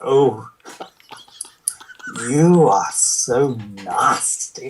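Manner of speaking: booming character voice, every word drawn out. Quoting how Mister Sinister said the line: Mister Sinister voice. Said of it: "that's how Mister Sinister said it".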